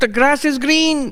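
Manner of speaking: very high-pitched, piping voice. Act out a man coming into a class of seated novices, in a high-pitched voice. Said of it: "He had a high-pitched voice".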